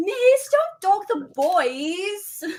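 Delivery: put-on very slow Australian accent, "boys" stretched out. Actor recalling the line they deliver in an Australian accent. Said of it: "whenever I get into the Australian accent".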